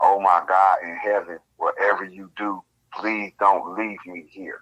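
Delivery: put-on desperate, frantic pleading tone. Retelling a companion's call after a fall: imitating a desperate plea. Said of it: "There was something in his voice that was like".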